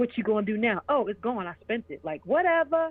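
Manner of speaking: smug, dismissive needling. Retelling how a smug partner taunted after spending the money: imitating a smug man. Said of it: "And he was so smug".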